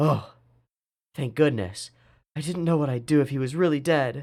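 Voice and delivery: crying, tearful voice. A character hearing that he isn't really dead after all, crying. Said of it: "why are you crying?".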